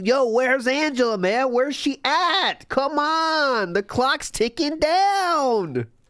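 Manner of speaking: very high, impatient, freaked-out yammering rant. Retelling how DSP acted when Angela was late on a call: imitating DSP flipping out. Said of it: "He was flipping out when she wasn't showing up".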